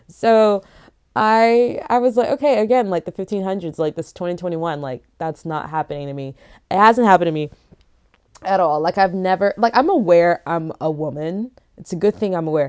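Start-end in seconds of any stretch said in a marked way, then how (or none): none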